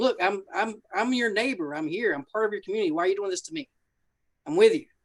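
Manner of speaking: earnest, begging, acted-out pleading tone. Retelling a bar owner's words to the men smashing his bar: imitating a pleading bar owner. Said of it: "he's pleading with him".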